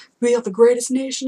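failed, bad put-on American accent. Mimicking Trump supporters in a bad American accent. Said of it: "that's not an American accent".

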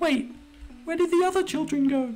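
put-on bad girl-character voice. Voicing a character in a story, the speaker does a bad girl voice. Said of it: "I'm so bad at girl voices".

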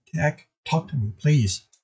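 ordinary delivery

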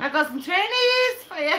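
very high, failed, bad Scouse accent. Trying to do a Liverpool accent that isn't working, bad Liverpool accent attempt. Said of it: "I'm trying to do a Liverpool accent".

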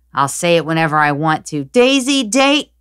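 high-pitched, loud shouting.

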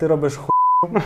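said kindly, tenderly, gently and mildly. Recounting what a man once told him, quoting the words gently. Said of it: "лагідно сказав".

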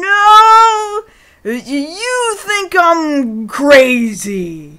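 put-on high, very slow, stumbling drunk talk. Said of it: "drunkenly stumbles around".

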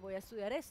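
ordinary talk

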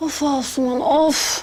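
fed-up, exasperated huffing and puffing. A character huffs in complaint and is told to stop: exasperated huffing. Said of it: "Hiç oflayıp poflama".

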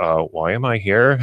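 normal talking voice

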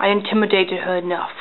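ordinary talk, nothing marked

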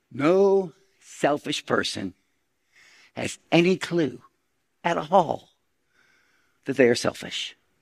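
very slow, halting delivery, words broken apart. Addressing an audience before asking for a show of hands, talking slow. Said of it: "I'm going to talk slow".

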